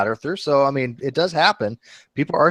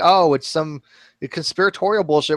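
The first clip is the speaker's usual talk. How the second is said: ordinary delivery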